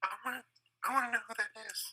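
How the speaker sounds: hushed, very high half-whisper under the breath. Playing Sophie after hearing footsteps going up the tower, half-whispering in Sophie's voice. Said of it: "I whisper".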